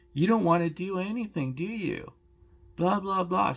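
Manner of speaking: heated, angry ranting delivered as screaming. Retelling a dentist's reply after refusing deep cleanings: imitating someone screaming. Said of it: "he started screaming and yelling at me".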